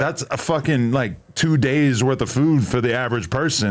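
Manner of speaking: normal talking voice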